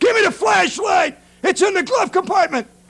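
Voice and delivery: loud yelling voice. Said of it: "He yells into his wife".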